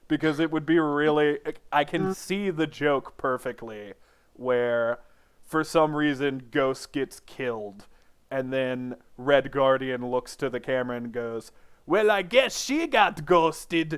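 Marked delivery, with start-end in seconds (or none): 11.8-14.0 lousy character voice, high-pitched and loud. Imagining a movie joke after Ghost gets killed, doing a poor Red Guardian voice. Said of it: "This is not a Russian accent. This is just a poor voice".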